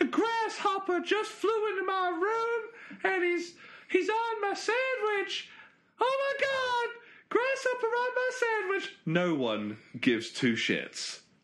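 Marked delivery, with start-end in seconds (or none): 0.0-9.0 put-on squeaky, very high child's voice. Imitating a kid playing Call of Duty, squeaky kid voice. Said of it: "some kid with a squeaky voice going".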